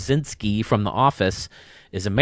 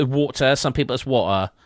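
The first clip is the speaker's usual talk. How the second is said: put-on soccer-commentator British accent; 3 semitones higher than usual. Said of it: "you calling a soccer match there".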